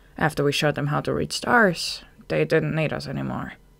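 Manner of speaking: ordinary delivery, nothing marked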